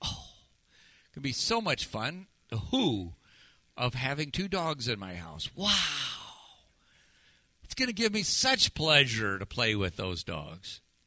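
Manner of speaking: dripping sarcastic fake delight, swooping. Talking about an upcoming visit to the grandkids and granddogs, with sick sarcasm. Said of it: "Not just my sick sarcasm".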